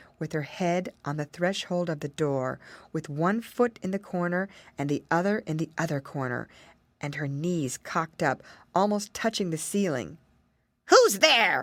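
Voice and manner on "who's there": loud, awful, snarling witch voice. Reading a tale, the Witch sees the children at her door: snarling in an awful voice. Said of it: "she snarled in an awful voice".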